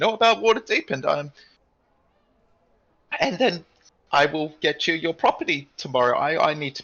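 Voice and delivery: loud, high, squeaky voice. Voicing a character inviting the group to drink and celebrate, squeaky voice. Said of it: "straightens up and squeaks as he talks".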